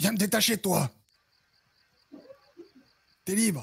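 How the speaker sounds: swooping, high, snarling growl. Role-play scene, a captive character demanding to be untied, growling. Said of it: "en grognant".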